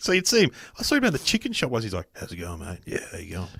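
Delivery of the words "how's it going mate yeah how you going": deep, very quiet voice. Retelling a man speaking to him at the chicken shop: Marlon Brando-style deep voice. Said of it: "when you lower your voice, you sound a bit like Marlon Brando. And from that point on, he spoke like Marlon".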